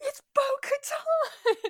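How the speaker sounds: acted excited yelling. Recounting the moment with her husband, retelling an excited yell. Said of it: "we're both yelling".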